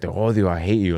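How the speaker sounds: put-on angry ranting. Retelling a mother cussing out a ghost at a stoplight: imitating mom cussing angrily. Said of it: "she was talking shit on it".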